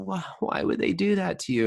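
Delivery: put-on weepy, sobbing, very high tearful voice. Retelling what a crying friend said on the phone: imitating someone crying. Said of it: "She's, like, crying".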